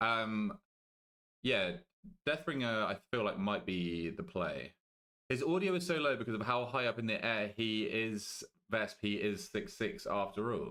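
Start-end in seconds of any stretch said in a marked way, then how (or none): 8.7-10.7 mechanical, machine-like, robot-like reading. Streamer reading a viewer's message aloud, in a robotic monotone. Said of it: "I don't know why I read that like a robot".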